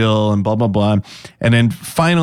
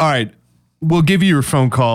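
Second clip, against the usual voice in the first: usual speaking voice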